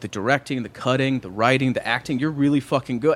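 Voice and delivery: ordinary talk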